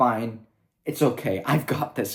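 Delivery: upbeat, carefree, light and easy, dismissive. Retelling Luke leaving his mentors behind: imitating Luke smiling.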